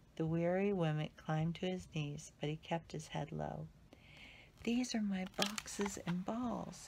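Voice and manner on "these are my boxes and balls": quiet, soft, gently spoken, low-key. A weary figure replies to the other's remark; said quietly. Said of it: "he said quietly".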